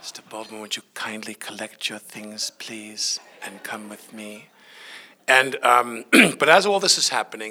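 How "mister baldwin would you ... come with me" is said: mock-calm, hushed voice, much quieter. Retelling how a woman asked him to leave the plane, imitating quiet, calm speech. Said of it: "she just spoke very quietly and very calmly".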